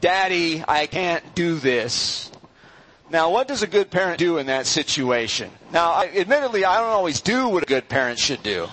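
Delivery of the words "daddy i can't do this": very slow crying, put-on crying child voice. Retelling a child's words over hard homework, imitating a crying child. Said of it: "He'll just be sitting there crying, saying".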